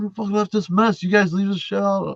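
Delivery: mock furious, high, angry yelling. Retelling how a garage owner yelled at his workers, imitating a boss yelling. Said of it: "he's yelling at his guys".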